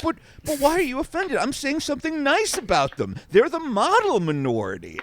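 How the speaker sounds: swooping, full uncle voice. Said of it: "full uncle at, at, like, Christmas".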